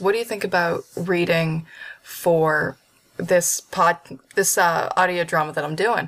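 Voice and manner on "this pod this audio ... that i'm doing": ordinary talk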